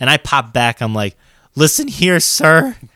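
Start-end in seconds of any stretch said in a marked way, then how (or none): 1.5-2.7 put-on voice cracking, higher and louder. Retelling a reply to a coworker: retelling a cracking voice. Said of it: "With my voice cracking and everything".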